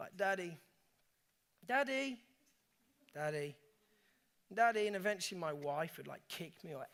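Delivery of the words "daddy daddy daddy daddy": calm, unalarmed, slow, steady, persistent calling voice. Retelling how his four-year-old called him at four in the morning, imitating Benj calling persistently. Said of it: "It wasn't an alarmed voice, but it didn't quit".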